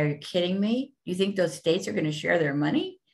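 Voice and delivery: scoffing, dry, sarcastic tone. Answering a question on filing sales tax with each state: mock sarcastic. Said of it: "I wanna be sarcastic and say".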